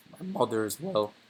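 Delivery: voice breaking. Talking about his father and mother, voice cracking. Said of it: "voice crack".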